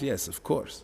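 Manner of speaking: mock deadpan tone. Speaker quoting a man's answer in their back-and-forth conversation, retelling a deadpan reply. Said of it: "but he's deadpan".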